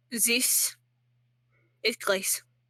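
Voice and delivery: put-on accidental French accent. Voicing a character in a game, slipping into a wrong French accent. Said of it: "that's the wrong accent".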